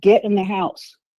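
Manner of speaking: mock stern, firm, no-nonsense voice. Retelling a father's order to come inside: imitating a firm order. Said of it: "he just firmly said".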